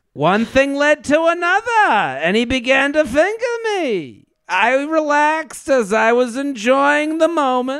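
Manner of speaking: woman's voice with Yiddish accent, very high pitch.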